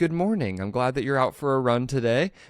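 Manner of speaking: nice, reassuring, soothing, calming voice. Describing how a coaching feature gets demonstrated, imitating a nice calming voice. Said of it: "they demonstrate it like this nice calming voice is like".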